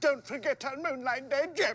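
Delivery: high, mawkish, lovesick, sick-sheep voice. Taunting a woman by repeating what she said to a man, in a sick sheep's voice. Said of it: "says to him in a sick sheep's voice".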